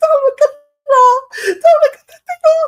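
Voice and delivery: very high, very loud, frightened shriek. Retelling how a scared little brother screamed at the music: imitating a child screaming. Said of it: "I remember my brother screaming".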